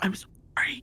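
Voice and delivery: hushed whisper. Retelling leaning over to the one who said be careful; whispering. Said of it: "lean over and whisper like".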